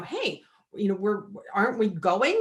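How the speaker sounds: usual speaking voice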